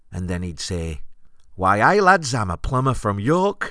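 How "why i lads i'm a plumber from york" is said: put-on Geordie accent, raised and pitched-up. Retelling what a man would say while miming a plumber: Geordie accent. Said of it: "it would be in a Geordie accent".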